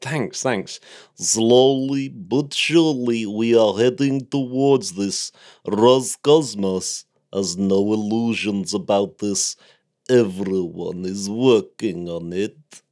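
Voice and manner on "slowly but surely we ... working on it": very slow, every word drawn out. Reading out a quote about war beyond Earth: Dmitry Rogozin impression. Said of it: "What an impression".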